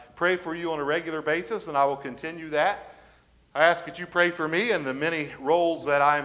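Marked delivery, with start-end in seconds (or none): none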